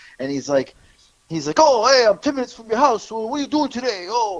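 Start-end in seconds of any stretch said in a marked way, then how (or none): 1.6-4.4 fake Italian accent, put-on guy voice, pitched up. Retelling a phone call on request, imitating a fake Italian guy. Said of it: "fake Italian guy".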